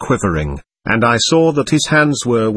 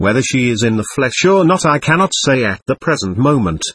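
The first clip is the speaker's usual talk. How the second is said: ordinary delivery, nothing marked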